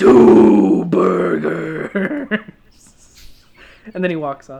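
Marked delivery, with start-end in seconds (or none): 0.0-2.4 resounding, loud, rough, wall-shaking booming voice. Retelling a man at a bar ordering food, in his booming voice. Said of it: "he says in that same booming voice".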